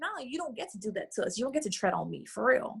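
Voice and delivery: plain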